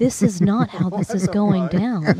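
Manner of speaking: put-on quiet, calm speech. Retelling an ex's words in arguments: imitating someone getting really quiet. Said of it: "And he'd get really quiet".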